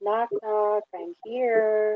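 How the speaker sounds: hushed, gentle, slow stage whisper. Calling up to a platform above in a game scene: half-whispering softly. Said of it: "I'm just gonna whisper softly".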